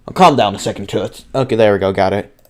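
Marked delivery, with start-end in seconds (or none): 0.2-1.3 hard-boiled tough-guy noir detective voice. Reading a detective game's phone scene aloud: hard-boiled detective voice. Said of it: "I gotta nail down a voice for this guy".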